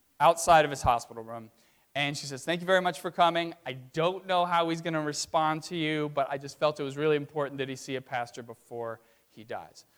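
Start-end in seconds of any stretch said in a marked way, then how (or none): none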